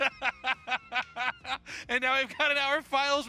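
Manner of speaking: high, gloating mock yell with laughter.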